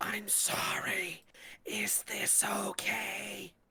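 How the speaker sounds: loudest, high stage whisper. Retelling what he said after getting in real close, in his loudest stage whisper. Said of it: "in his loudest stage whisper".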